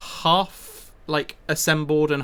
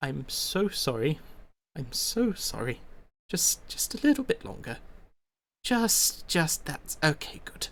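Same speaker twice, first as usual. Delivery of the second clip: very faint murmur, quieter and slower; 7 dB quieter than usual. Narrating a character working on a mechanical construct, very faint murmur. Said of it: "you can hear him very faintly".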